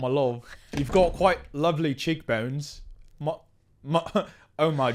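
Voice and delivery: light put-on mock British accent. Improvising a scene with the other speaker, doing a bit of a British accent. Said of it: "do a little bit of a British accent".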